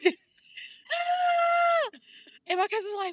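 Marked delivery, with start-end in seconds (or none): 0.0-2.0 very shrill, very high, very loud shriek. Telling about screaming in the shower with a cousin on speakerphone, retelling a dramatic scream. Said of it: "I just scream because I'm dramatic".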